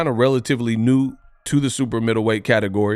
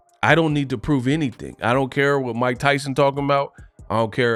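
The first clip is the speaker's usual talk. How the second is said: normal talking voice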